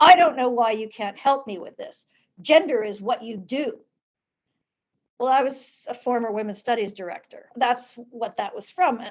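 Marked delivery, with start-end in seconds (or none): 0.0-3.8 put-on exasperated voice, louder. Retelling what he said after hearing about the divorce: imitating an exasperated voice. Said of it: "in this exasperated voice".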